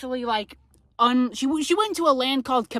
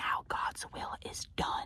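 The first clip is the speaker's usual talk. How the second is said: very soft, barely voiced, hushed whisper. Retelling how Joanne spoke to the newly crowned king: imitating a whisper. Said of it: "Joanne whispers to homeboy".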